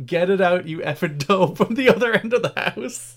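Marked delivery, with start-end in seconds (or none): 0.0-1.6 mock, heated, passionate shout. Retelling their father shouting at rugby on TV: imitating someone shouting. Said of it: "we just heard him shouting".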